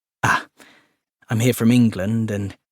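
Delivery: ordinary delivery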